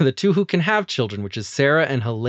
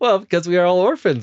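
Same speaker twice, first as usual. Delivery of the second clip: put-on pitched-up Ukrainian accent; 5 semitones higher, 3 dB louder than usual. Retelling a TV scene, speaker quotes Helena in her Ukrainian accent. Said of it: "She's got like a Ukrainian accent".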